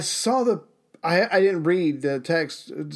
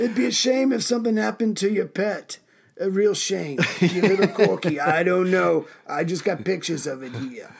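put-on wiseguy mobster voice. Riffing on how the Italian mafia would react: put-on mafia voice. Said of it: "Why do you sound like Trump when you're doing your mafia voice?".

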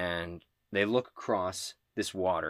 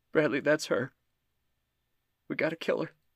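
put-on high, frightened, pleading small-child voice; 8 semitones higher than usual. A warrior clutching Bradley's hand speaks to him, in a scared little kid voice. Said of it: "She sounds like a scared little kid".

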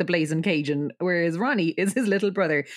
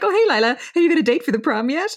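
mock, very high, loud, all-upbeat chirp; 10 semitones higher, 6 dB louder than usual. Recapping a Sweet Valley High episode, voicing Cheryl talking to Lila, all upbeat. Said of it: "Cheryl's like all upbeat".

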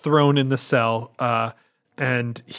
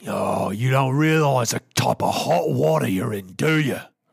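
put-on creature guard voice. Voicing a guard ordering two prisoners to be quiet: Gamorrean guard voice. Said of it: "a Gamorrean guard wanders over".

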